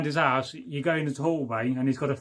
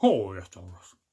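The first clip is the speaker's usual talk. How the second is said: deep, very low dog character voice; 7 semitones lower than usual. Drinking cider, repeating the phrase like the dog from the advert. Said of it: "I sound like the dog from the advert".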